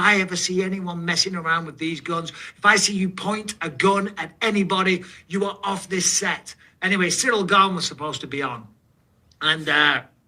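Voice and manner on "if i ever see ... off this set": mock stern drill-sergeant voice, screaming. Retelling a weapons trainer's warning to the actors: imitating someone screaming. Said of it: "he's screaming in our faces, like".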